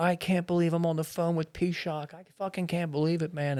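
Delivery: weeping, crying, tearful voice. Retelling what a caller said on the phone, imitating someone crying.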